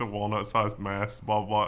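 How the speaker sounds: ordinary talk, nothing marked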